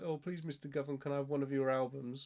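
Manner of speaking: ordinary talk, nothing marked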